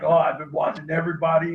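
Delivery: put-on gravelly superhero voice. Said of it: "almost with the voice".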